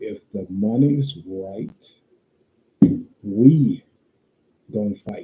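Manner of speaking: slow, deliberate, spelled out word by word. Repeating a point a second time for the chat: said slowly. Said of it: "I'll say that again slowly".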